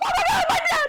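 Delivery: sudden, high-pitched, excited scream. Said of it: "I just scream".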